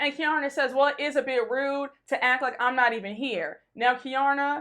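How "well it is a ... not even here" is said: plain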